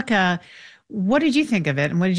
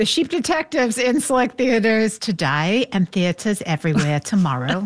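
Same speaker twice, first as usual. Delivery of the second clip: deliberately bad, fake British accent; 3 semitones higher than usual. Announcing a film release, in a bad British accent. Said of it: "See, there's a bad British accent".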